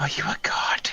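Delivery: hushed whisper. Leaning in real close to someone, asking them a question: whispering. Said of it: "get like real close and just whisper".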